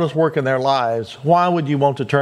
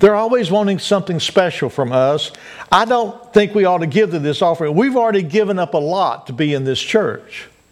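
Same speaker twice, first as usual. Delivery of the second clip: ordinary delivery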